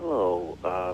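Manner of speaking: very soft, faint, too quiet voice.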